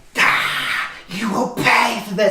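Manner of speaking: high, drawn-out, shrieking, wailing scream. Voicing Saris bursting up from the water, attacking: screaming.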